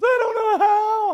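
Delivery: play-acted, very high, very loud shrill sobbing. Retelling a nine-year-old daughter's words to her dad: imitating daughter crying. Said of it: "Don't cry".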